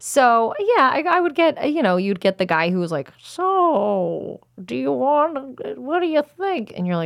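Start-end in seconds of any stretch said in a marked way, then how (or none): 3.2-6.7 put-on very slow, stretched, high elderly old-man voice. Retelling what a guy would say to her on the job, in an old man voice. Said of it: "based on that voice you just did".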